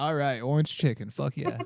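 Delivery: ordinary talk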